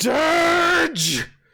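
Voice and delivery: high-pitched, loud, bellowed orc monster yell.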